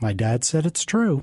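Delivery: ordinary delivery, nothing marked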